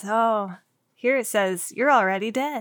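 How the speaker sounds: peaceful, calm, soothing voice. Retelling a palm reader's line from a movie scene: imitating a peaceful, calm voice. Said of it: "in such a peaceful, calm way".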